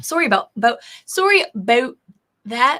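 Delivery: put-on Canadian accent. Host apologizing on a show, in a put-on canadian accent. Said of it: "I gotta practice my Canadian accent".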